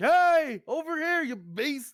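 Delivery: loud, very high-pitched scream. Playing a character trying to draw a beast's attention: screaming at a beast. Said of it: "can I just scream at it?".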